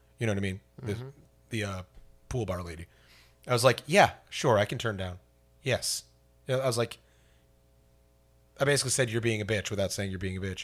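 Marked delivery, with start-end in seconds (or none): 3.9-6.0 put-on curt, clipped tone. Speaker retells answering a pool bar lady she disliked, retelling a curt reply. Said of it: "And I was very curt with her".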